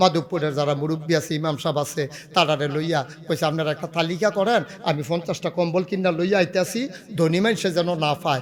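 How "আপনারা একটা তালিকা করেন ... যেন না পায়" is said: ordinary talk, nothing marked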